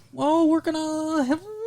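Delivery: odd, very high, soft sexy voice rising in pitch.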